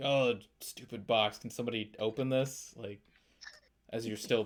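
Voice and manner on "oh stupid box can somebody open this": ordinary delivery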